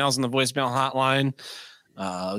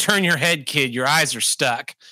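stern, no-nonsense, firm tone; 3 dB louder than usual. Recounting warning a kid who stared at the speaker's sister; retelling a stern warning. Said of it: "why is that giant man speaking sternly at my kid?".

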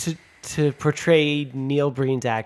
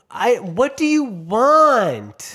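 put-on overacted yell, much higher, louder, slower; 8 semitones higher, 5 dB louder than usual. Mocking a show's bad acting, imitating the girl yelling at her husband. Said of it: "she's just yelling".

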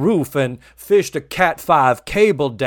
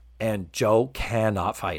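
normal talking voice

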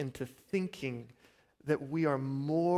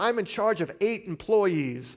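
sudden, high, loud yelled outburst; 5 semitones higher, 6 dB louder than usual. Retelling a comedy sketch at a Thanksgiving dinner table: imitating Will Ferrell yelling. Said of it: "he yells out".

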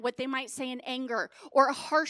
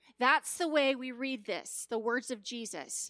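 usual speaking voice

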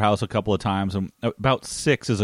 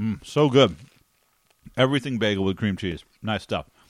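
talking with mouth full, chewing. A speaker takes another bite of bagel, talking with mouth full. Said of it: "another mouthful of freaking bagel".

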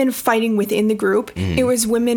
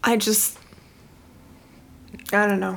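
getting worked up, quieter; 5 dB quieter than usual. Arguing that all the hate helps nobody: a little emotional. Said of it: "you're a little emotional right now".

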